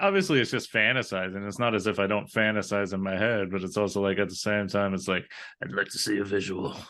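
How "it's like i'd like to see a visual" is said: put-on gross voice, lower and quieter. A podcast host talks with a co-host, in a gross put-on voice. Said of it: "that was a gross voice you put on there".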